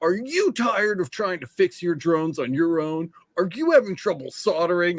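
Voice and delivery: infomercial salesman voice, TV ad sales pitch. Retelling the pitch from an old infomercial-style video: imitating an infomercial pitch. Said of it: "the whole pitch was like".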